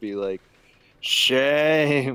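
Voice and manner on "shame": put-on slightly drunk, drawn-out, jeering voice. Voicing a drunk character pointing at the druid: slightly drunk shout. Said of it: "slightly drunk 'cause he failed one save".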